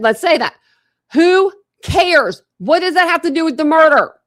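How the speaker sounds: worked-up, heated yelling. Arguing on a call about a murder case and a cheating claim, yelling heatedly. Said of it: "I'm sorry I'm yelling so much tonight".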